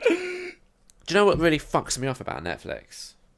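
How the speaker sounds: fired-up, very angry rant, high and swooping. Starting a complaint about netflix to the others: very angry. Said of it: "you sound very angry about it".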